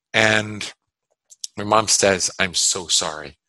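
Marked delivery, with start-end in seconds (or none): 2.4-3.2 mock ashamed voice, much lower. Retelling the mother's apology to him, imitating mom's shamed voice. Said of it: "really shamed look in her face".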